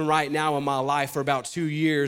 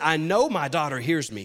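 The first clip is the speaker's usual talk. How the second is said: ordinary delivery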